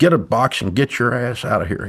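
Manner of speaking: mock irate, furious boss yelling and barking. Retelling how a former boss burst in to fire him: imitating a yelling boss. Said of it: "he's yelling and screaming".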